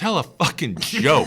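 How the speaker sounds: loud, screaming holler. Comedian retelling a guy at a biker bar screaming at the set, imitating a screaming heckler. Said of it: "this guy just starts screaming".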